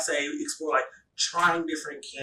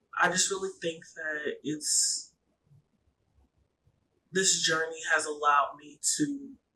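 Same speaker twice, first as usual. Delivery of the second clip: fighting back tears while speaking. Speaker reflecting on what their journey allowed, trying not to cry. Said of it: "try not to cry".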